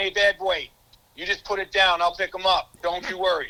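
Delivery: put-on regional upstate New York accent. Retelling what a teammate said after picking up the ball: imitating Reggie's upstate accent. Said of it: "his upstate accent".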